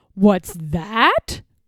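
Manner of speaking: terribly gruff, growling voice. Narrating a story, voicing the Bear answering the Rabbit, gruff growl. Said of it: "growled a voice that was terribly gruff".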